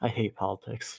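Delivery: quiet mutter under the breath. Predicting how Maximus will react, speaker voices him: Maximus muttering. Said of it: "just mutter".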